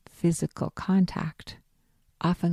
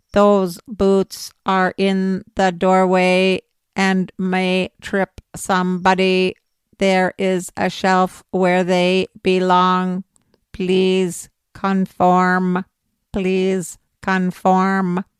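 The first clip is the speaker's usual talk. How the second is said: loud, flat, monotone robot machine voice; 7 dB louder than usual. The narrator suggests a playful line to say to a child, robot voice. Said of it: "in your best robot voice".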